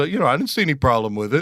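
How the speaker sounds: put-on offhand, casual, unbothered, nonchalant delivery. Retelling a man's account of a police statement, retelling someone's nonchalance. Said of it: "he's being all nonchalant".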